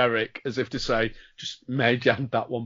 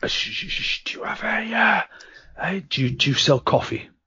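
very quiet, hushed, soft, much higher pitch; 8 semitones higher than usual. Customer asking a shop worker about coffee, speaking very quietly. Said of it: "Why are you speaking so quietly?".

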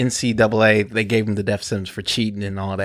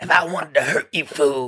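high, fast, raspy put-on voice. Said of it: "but he said".

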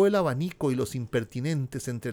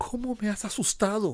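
breathless, almost out of breath, high exclaiming; 8 semitones higher, 4 dB quieter than usual. She exclaims after being startled by him, almost breathless exclamation. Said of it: "exclamó ella sin respiración casi".

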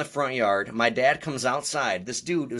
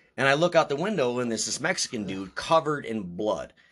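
ordinary talk

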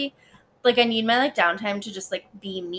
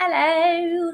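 high, loud, crazy put-on voice. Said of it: "I don't even know who that was".

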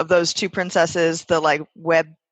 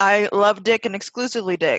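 ordinary delivery

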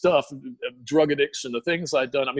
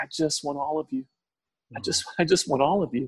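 gentle, soft, tender, hushed whisper; 2 semitones higher than usual. Retelling what was whispered in answer to a question: imitating a soft tender whisper. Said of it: "he just whispered, so soft and tender".

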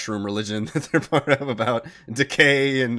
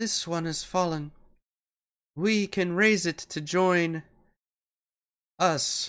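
high-pitched, mournful voice with ringing sorrow; 7 semitones higher, 4 dB quieter than usual. As the Myconid gets ready to leave, it looks down at a body: sad Myconid voice. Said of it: "As the Myconid gets ready to leave, ... sadness ring out in its voice".

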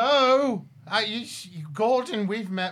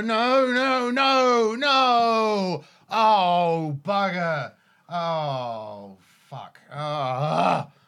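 staggering, dismayed, very slow, with drawn-out oh; 3 semitones lower, 3 dB louder than usual. Playing a character coming out of an alley, staggering: staggering character in dismay. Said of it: "And I'm staggering".

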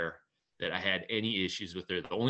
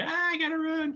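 very high, panicked, terrified shriek, acted out. Player recounting being chased across a game map, retelling a terrified scream. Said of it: "I'm like screaming".

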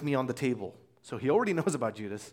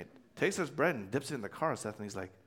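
ordinary talk

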